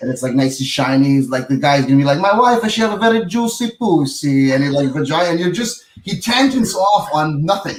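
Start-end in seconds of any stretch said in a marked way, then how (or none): 2.2-4.5 slow, high, drawn-out Italian man's voice. Retelling a joke about buying italian furniture: imitating an italian guy. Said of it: "like an Italian".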